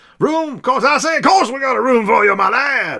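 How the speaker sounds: very high, loud cartoon voice. Reading a rooster landlord's comic line aloud: Foghorn Leghorn voice. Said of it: "in that foghorn leghorn voice".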